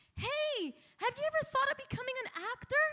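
very high, loud shout. Speaker retells calling to a stranger pumping gas, retelling a scream through window. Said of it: "I'm like screaming through the window".

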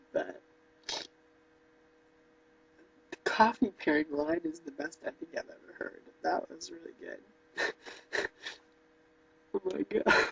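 crying while talking. Reading a note from mom aloud, crying while talking. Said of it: "I'm so ugly when I cry".

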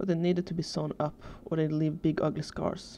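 plain

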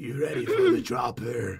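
put-on gravelly superhero voice. Playing as Batman after asking whether to talk like him: Batman voice. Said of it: "Should I try to talk like him?".

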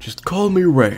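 put-on old grandpa voice. A talking desk lamp introduces itself to a newcomer, in an old grandpa voice. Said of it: "A desk lamp that sounds like an old grandpa?".

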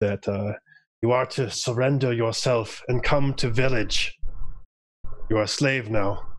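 wet, gurgling, barked creature voice. Narrating an enemy warrior barking at the party, gurgling voice like Shushar's. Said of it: "barks out in this gurgling voice".

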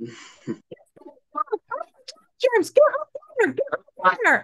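very high, sing-song, swooping put-on character voice. Chatting with others, the speaker announces an impression and starts imitating Lucy. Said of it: "Here's my impression of Lucy".

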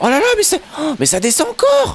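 frightened, alarmed cry, very high. Playing a game on stream, facing unknown new mobs, frightened. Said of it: "J'ai peur".

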